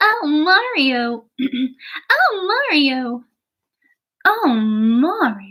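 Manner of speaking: loud anime-style princess character voice. Trying out character voices, the speaker does an anime-style Princess Peach voice. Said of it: "make it an anime voice".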